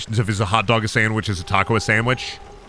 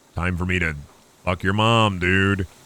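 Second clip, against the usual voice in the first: voiced like a cartoon cat; 5 semitones lower than usual. Joking about what Garfield would say: Garfield voice. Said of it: "Garfield be like".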